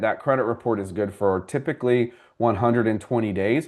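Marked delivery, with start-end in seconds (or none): none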